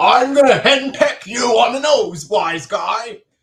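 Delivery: belted high cartoon voice. Quoting a cartoon scene after another speaker's impression: Fred Flintstone impression. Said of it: "And then Fred's like".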